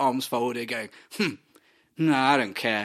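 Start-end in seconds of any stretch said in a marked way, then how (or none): 1.2-2.9 put-on stoic, unimpressed, indifferent tone. Retelling a game scene where the stoic character shrugs off a baby: imitating a stoic unimpressed character. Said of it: "the more stoic character is ... arms folded, going".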